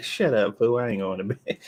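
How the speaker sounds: put-on baby voice. Telling a baby to go to bed, then voicing the baby's reply. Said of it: "She like".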